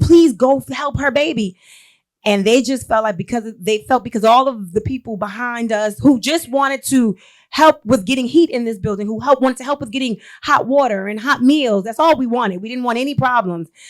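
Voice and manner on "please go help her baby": mock urgent, pleading yell. Recounting a crowd confronting people in a building, the speaker retells a yell. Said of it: "we are screaming and we are yelling".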